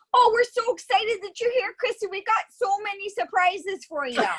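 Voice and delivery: excited put-on Canadian accent. Showing a Canadian actor playing excited at a baby shower, excited Canadian accent. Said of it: "the Canadian comes out".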